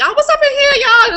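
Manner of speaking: put-on Southern accent. Describing a character being written, show how she talks: put-on southern way of talking. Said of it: "she talk like that".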